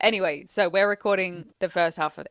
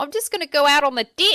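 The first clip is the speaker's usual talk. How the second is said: put-on New Zealand accent, pitched up, "deck" said as "dick"; 7 semitones higher, 4 dB louder than usual. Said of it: "our friend's from New Zealand".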